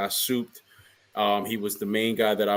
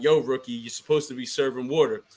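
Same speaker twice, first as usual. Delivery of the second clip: put-on yelling; 3 semitones higher than usual. Retelling how a coach called to a rookie posing with fans: imitating someone yelling. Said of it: "yelling at him like".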